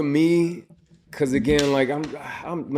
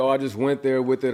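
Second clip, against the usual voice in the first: plain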